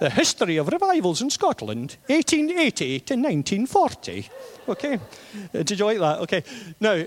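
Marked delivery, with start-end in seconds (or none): 0.0-4.3 swooping, sing-song Highland accent. Reading out a book's subtitle, the speaker says it in a Highland accent. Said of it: "I have to say it with a kind of Highland accent".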